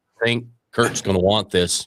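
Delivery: ordinary talk, nothing marked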